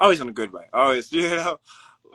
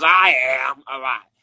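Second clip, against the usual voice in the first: loud, booming, slow character voice; 6 dB louder than usual. Explaining how he gets into character, showing how his character talks: Hobo Harry voice. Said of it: "you know he talks like this".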